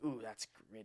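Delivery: ironic, teasing, sarcastic ooh. Showing how the word gritty gets used sarcastically: sarcastic tone. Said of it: "we'll use gritty in like a sarcastic way".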